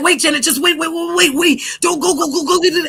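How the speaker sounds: rattled-off stammering repeats. Retelling how an ex-partner begged her to stay: imitating someone stuttering fast. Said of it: "He'd be stuttering and fast as hell".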